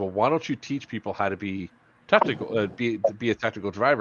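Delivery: ordinary delivery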